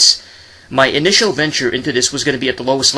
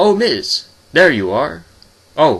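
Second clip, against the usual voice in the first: play-acted stiff, robotic, memorized-sounding delivery; 3 semitones higher than usual. Retelling a kid actor's backstage line: imitating a robotic rehearsed delivery. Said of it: "most robotic, most rehearsed delivery".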